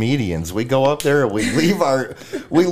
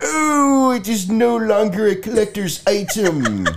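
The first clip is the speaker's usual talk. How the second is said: nerdy cartoon voice, much higher; 8 semitones higher than usual. Talking about cartoon voices they can do, the speaker does a Comic Book Guy voice. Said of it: "the comic book guy from The Simpsons".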